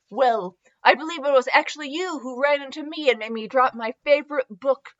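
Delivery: plain reading voice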